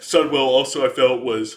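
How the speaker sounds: yawning while talking. Speaker reviewing raid fights, yawning after waking very early. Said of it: "I'm yawning because I'm thinking about T B C".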